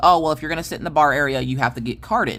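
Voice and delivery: normal talking voice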